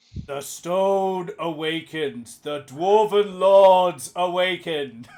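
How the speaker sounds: deep, low, rumbling ghostly voice. Retelling a scene where a different voice issues from a pillar, deep rumbling voice. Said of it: "a deep rumbling voice".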